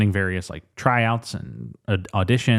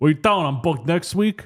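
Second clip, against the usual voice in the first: tough, pitched-up put-on wiseguy mobster voice; 7 semitones higher than usual. Retelling a movie scene where a mobster walks in: imitating a mobster. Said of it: "A mobster comes in and is like".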